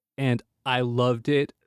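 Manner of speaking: usual speaking voice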